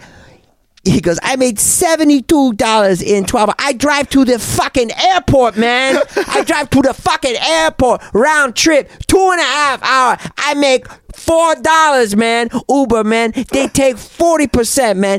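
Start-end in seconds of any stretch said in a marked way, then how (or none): 1.2-15.2 put-on Korean accent. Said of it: "I can't do the accent".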